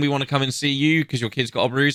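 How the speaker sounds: ordinary delivery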